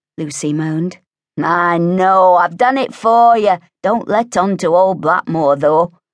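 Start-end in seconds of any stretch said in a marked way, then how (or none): 1.4-5.9 spoken through a laugh, raised voice. Lewis offers to keep the bucket full for Lucy, laughing. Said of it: "Lewis laughed".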